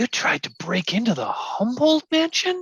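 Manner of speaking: very high-pitched stage whisper. Recounting how Sarah leaned in after hearing the story, Sarah's stage whisper, retold. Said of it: "kind of stage whispers".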